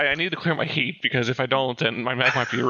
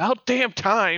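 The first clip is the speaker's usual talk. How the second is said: high, shouted yelling outburst; 7 semitones higher than usual. Voicing a character popping out of a mech's wreckage: yelling in character. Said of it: "just yells".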